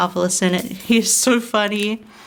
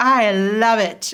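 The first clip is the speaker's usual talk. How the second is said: hammy, over-the-top, dripping with sarcasm. Retelling a favorite hat-shopping scene: imitating Hero's sarcastic, over-the-top line. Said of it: "so sarcastic and over the top".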